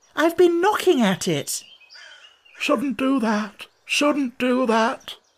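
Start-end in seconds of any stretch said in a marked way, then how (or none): 2.6-5.2 grumbling, muttered half to himself. The frog grumbles at Alice about her knocking at the door, muttering. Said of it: "the frog muttered".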